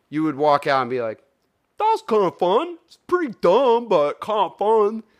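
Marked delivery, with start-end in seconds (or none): 1.8-5.0 very high-pitched put-on voice. Imitating a friend walking out of a movie: imitating Jake. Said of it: "that's an impersonation of my friend Jake".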